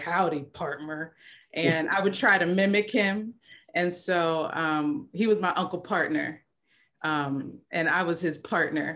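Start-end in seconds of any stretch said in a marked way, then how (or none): 0.0-1.1 deep voice, dropped low. Recalling how an uncle always greeted them, imitated in a deep voice. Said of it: "with that deep voice".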